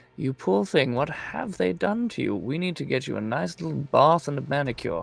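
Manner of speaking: close, hushed whisper. Speaking unheard from the ethereal plane into a woman's ear, whispering. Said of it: "but I whisper into her ear".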